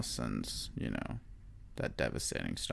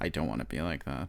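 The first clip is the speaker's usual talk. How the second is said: ordinary talk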